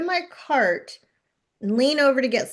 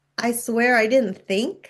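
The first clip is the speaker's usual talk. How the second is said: ordinary talk, nothing marked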